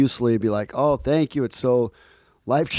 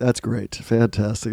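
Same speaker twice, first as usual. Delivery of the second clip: mock exhausted tone, slower pace; 2 semitones lower than usual. Speaker imitates how the other person just said it: mimicking an exhausted tone. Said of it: "sounded like you were exhausted".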